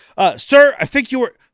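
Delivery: very loud, very high, shrill, stern, intimidating cop voice. Acting out a man practicing a traffic stop in his own empty cruiser, mock-intimidating cop voice. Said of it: "you got to do it more intimidating".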